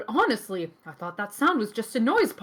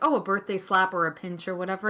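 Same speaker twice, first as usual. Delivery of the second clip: ordinary delivery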